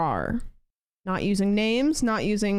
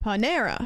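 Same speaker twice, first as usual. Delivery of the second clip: Panera with the second syllable -ne- leaned on. Settling how to say Panera, stress on -ne- in Panera. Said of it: "Emphasis on the second syllable".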